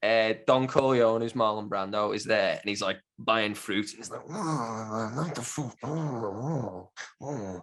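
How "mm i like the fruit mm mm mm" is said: very slow, soft, hushed voice, lingering on I. Describing a film scene, imitating its actor: Marlon Brando impression. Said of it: "That's a great Brando".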